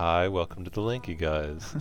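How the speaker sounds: mock-unexcited, flat, unenthused tone. Mimicking how the other speaker sounded in the greeting, mock-unexcited flat greeting. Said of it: "You didn't sound very excited".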